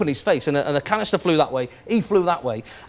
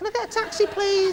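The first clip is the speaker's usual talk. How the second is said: squeaky, very high helium-like squeaking voice; 3 dB quieter than usual. Speaker recalling friends sucking balloon air and ringing for taxis: squeaky balloon-air voice. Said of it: "having squeaky voices and ringing for taxis".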